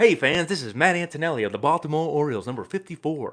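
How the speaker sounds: loud, high radio announcer style voice. A baseball player recalls introducing himself to fans, in his radio voice. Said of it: "So I was doing it in like my radio voice".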